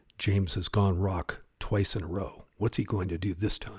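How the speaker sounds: mock announcer voice, low tones. Imagining announcers at a rock-paper-scissors tournament: announcer talking in low tones. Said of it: "announcers talking in low tones like".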